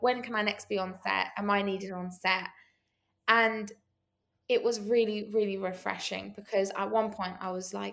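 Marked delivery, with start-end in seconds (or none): none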